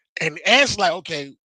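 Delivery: normal talking voice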